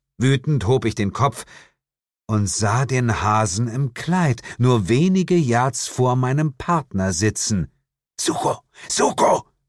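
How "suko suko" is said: hissing the words. The narrator, spotting a hare near his partner Suko, hisses. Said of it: "zischte ich".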